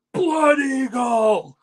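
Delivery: high, slow, loud, drawn-out battle-cry scream. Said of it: "And I scream".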